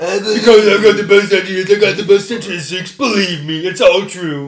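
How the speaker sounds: loud, boastful, over-sure bragging patter. Answering a question in the same put-on voice: talking like Donald Trump. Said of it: "why are you talking like Donald Trump?".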